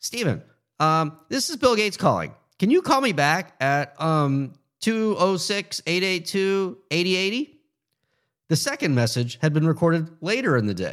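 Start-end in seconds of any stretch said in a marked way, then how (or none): 0.0-7.6 somewhat squeaky, distracted voice, pitched up. Retelling a voicemail message from a caller: imitating a squeaky, distracted voice. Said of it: "A somewhat squeaky and distracted voice said".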